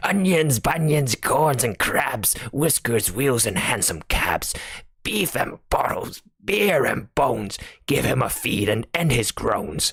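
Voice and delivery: thick-voiced, cross, angry growl. Narrator reads the pudding's reply before Bill can answer, thick, angry Albert voice. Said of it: "a thick, angry voice came out of the pudding".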